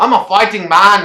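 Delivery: bad impression, high-pitched, loud British accent.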